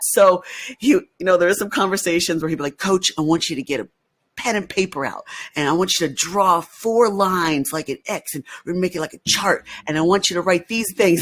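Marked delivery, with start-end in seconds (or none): 2.8-11.2 put-on Southern accent, higher pitch. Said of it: "he had this, like, Southern accent".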